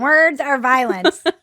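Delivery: sarcastic, mocking cartoon-show voice. Speaker repeating a phrase the way he hears it in his head, South Park voice. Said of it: "I hear it in like a South Park voice".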